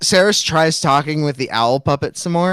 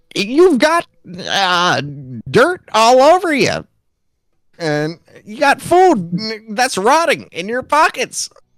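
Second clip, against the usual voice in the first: high, swooping cartoon frog puppet voice; 7 semitones higher than usual. Improvising a scene, the speaker talks as Kermit the Frog: Kermit the Frog voice. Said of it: "and he and he goes".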